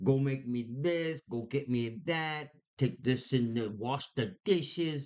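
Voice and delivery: put-on New York accent. Acting out a partner bossing the other around, in a New York accent. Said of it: "It's my New York accent".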